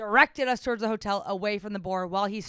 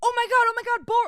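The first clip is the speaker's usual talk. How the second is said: mock freak-out, very high, loud, excited; 6 dB louder than usual. Recounting driving while he spots wild boar, retelling someone freaking out. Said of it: "freaks out about them".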